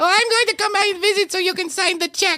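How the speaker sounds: very high-pitched character voice. Acting out a skit scene, visiting to get a check signed: Astrid voice. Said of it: "this voice that I'm doing for her".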